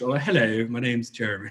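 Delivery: exaggerated put-on posh British accent. Showing American listeners different British accents, really posh British accent. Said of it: "really Cockney or really posh".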